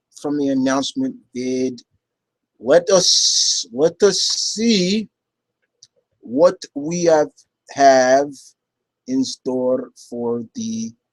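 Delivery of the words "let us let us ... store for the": very slow, drawn-out put-on Russian accent. Moving on from the announcement video questions, speaking in a Russian accent. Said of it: "why am I talking with a Russian accent?".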